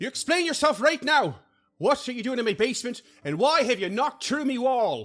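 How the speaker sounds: very high, shrill, furious, fuming scolding. Narrating a scene, the speaker voices Tamily confronting the intruders: Tamily fuming, scolding. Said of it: "Tamily is just like fuming".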